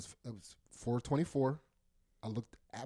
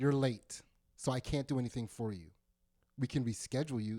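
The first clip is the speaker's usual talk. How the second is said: put-on, very condescending voice. Retelling what a groomer said about being late: imitating a condescending tone. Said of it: "And she said it like that. Like, really condescending".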